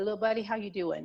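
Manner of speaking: usual speaking voice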